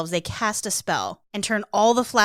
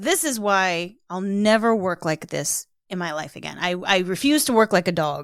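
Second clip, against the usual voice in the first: ordinary delivery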